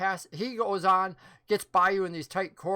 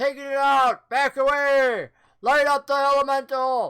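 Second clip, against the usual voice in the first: loud, high, shouted yelling; 6 semitones higher, 8 dB louder than usual. Narrating a ship scene to players, voicing someone up ahead: yelling orders. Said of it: "you hear somebody else yell".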